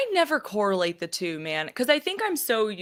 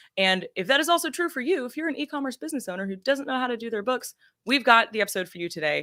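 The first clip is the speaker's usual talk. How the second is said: 90s commercial announcer tone, higher pitch; 5 semitones higher than usual. A podcast host introduces today's episode, sounding like a 90s commercial. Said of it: "I sound like a 90s commercial".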